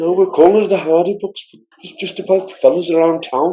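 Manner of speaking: put-on Scouse Liverpool accent. Retelling how Martin described his videos, imitating Martin's Liverpool accent. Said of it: "In the Liverpool accent".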